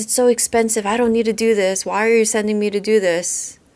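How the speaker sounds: half-yelling. Retelling how a woman argued with the speaker, imitating someone yelling. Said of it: "kind of yelling at me".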